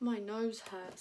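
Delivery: plain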